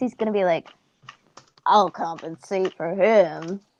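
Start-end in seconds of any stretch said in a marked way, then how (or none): 1.7-3.6 deep voice, low and very drawn out. Describing what Finn is gonna say, in his deeper voice. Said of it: "in his deeper voice".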